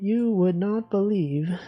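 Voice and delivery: bad, fake AI text-to-speech narrator voice. Trying out a phrase the AI voice would say: imitating the CapCut AI voice. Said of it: "what's a phrase that the A I voice would say?".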